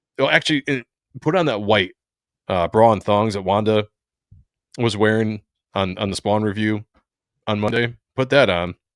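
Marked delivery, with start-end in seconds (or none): none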